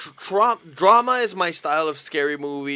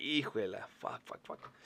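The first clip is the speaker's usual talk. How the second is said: play-acted tense, nervous whispered voice; 4 semitones lower, 17 dB quieter than usual. Acting out watching a suspense movie: imitating tense reaction to suspense movie. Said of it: "I'll be like".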